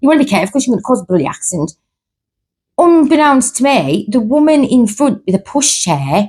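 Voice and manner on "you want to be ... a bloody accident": ordinary delivery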